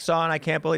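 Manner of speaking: mock sobbing, tearful, overcome crying voice. Acting out a father whose son died, seeing him again: imitating a crying dad. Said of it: "And he's gonna be crying".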